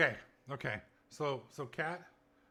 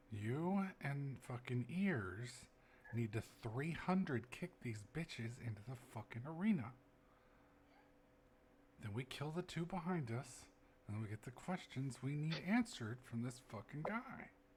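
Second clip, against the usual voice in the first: whispering, much quieter; 5 dB quieter than usual. A character grabs a companion by the head and speaks in their ear, whispering in his ear. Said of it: "whispering in your ear hole".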